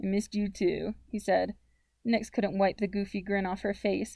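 plain reading voice

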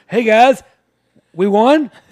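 high, booming, slow, loud belted delivery. Joking about an election win, doing Joe Biden: Joe Biden impression. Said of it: "when Biden wins, he goes".

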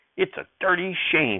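curt, sharp, high-pitched snapping tone. Hearing the narrator's answer, a woman snaps. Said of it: "she snapped".

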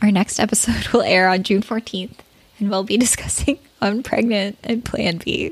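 giggling, laughing while talking. Announcing the next episode's titles, laughing while talking. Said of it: "I don't know why I'm laughing".

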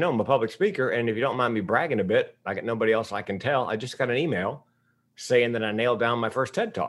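ordinary talk, nothing marked

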